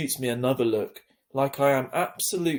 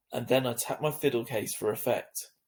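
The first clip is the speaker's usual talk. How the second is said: ordinary delivery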